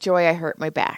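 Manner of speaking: ordinary talk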